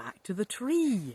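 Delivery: ordinary delivery, nothing marked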